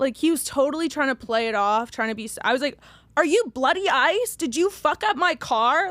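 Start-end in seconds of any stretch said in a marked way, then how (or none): 3.2-5.9 accusing, drawn-out mild yell, half screamed. Retelling confronting a man in a park: imitating herself screaming.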